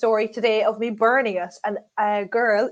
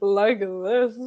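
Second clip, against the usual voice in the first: much lower-pitched voice. Talking about the voice they would prefer, demonstrating a lower voice. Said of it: "I'd prefer mine to be a bit lower".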